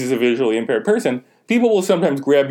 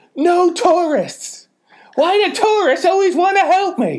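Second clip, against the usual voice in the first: acted-out shrill, very high screeching rant. Retelling what an old woman with a cane screamed at people: imitating someone screaming. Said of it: "she screamed at them and goes".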